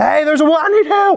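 strained, high-pitched shouting.

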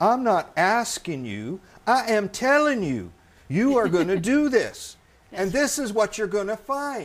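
booming Southern drawl. Retelling how Johnson ordered Warren, who refused, to do it: Johnson's Southern drawl. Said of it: "comes out with his good Southern drawl".

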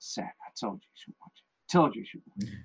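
hushed, breathy whisper, barely above a breath. Retelling what Dad said that night after the film: imitating Dad speaking quietly. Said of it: "Dad's giving it quietly".

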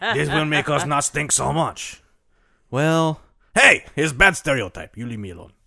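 clumsy fake French accent with Spanish creeping in. Telling the history of the bidet, the speaker voices the French: bad French accent. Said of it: "You got a little Spanish there".

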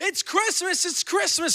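put-on overjoyed, excited, high-pitched screaming. Retelling springing out of bed on Christmas morning, retelling an excited scream. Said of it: "I'm screaming".

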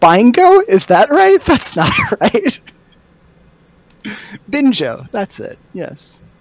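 put-on very high elderly woman voice. A player in a tabletop game speaks in character, old lady voice. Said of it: "in an old lady voice".

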